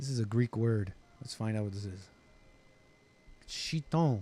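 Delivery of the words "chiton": French-sounding, French-style pronunciation. Reading an unfamiliar Greek word aloud: French-sounding pronunciation. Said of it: "I said that like a French person".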